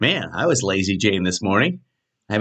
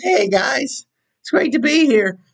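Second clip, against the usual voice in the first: put-on very high, young, teenage-sounding voice; 3 dB louder than usual. Showing how the voice sounds by noon, high, teenage-sounding voice. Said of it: "by noon, I'm talking like this. ... Sound like a teenager".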